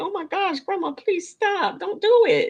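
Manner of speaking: shocked, scandalized, pearl-clutching, pleading tone. Reacting to embarrassing sex talk, clutching pearls: mock scandalized pleading. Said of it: "I'm clutching my pearls like".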